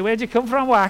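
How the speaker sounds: bad, rubbish put-on Scouse accent. Speaker retells trying to join a group, in a bad scouse accent. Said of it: "I tried to put on a Scouse accent and say".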